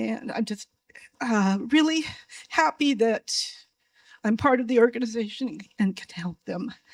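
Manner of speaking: moved, emotional delivery with halting pauses to steady. Speaking about being part of the organization, then apologizing, emotional. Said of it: "Sorry, I'm emotional".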